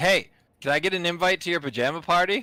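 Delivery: high calling-out yell. Voicing a character calling out to people in robes: yelling out in character. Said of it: "Emerson's gonna yell out".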